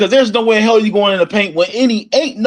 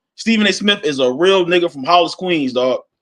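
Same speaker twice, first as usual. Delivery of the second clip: usual speaking voice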